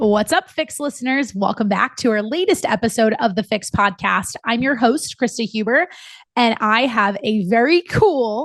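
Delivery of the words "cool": heavy emphasis leaning hard on the word cool. Podcast host introducing her guest, with stress on the word cool. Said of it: "emphasis on the word cool".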